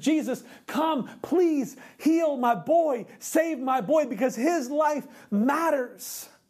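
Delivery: acted-out desperate pleading, crying out, pitched high. Retelling a Bible passage, acting out a father begging Jesus to heal his boy, desperate pleading. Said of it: "he's begging, he's crying out, he's pleading".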